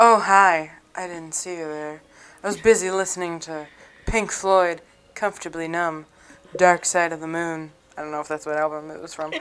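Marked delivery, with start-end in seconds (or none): 0.0-7.7 smooth, suave, charming delivery. Doing a bit the other speaker praises, greeting someone in a suave voice. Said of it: "I love the suave voice you're really hitting it with right now".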